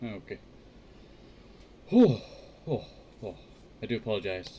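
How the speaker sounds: catching breath, panting. Streamer starting a stream and apologising, out of breath. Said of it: "I'm a bit out of breath there".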